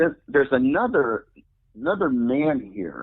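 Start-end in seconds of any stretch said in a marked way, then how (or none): none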